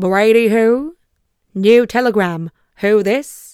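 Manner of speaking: clumsy mock Australian accent. Retelling a man's reply once they get in there, bad australian accent. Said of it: "I cannot do accents".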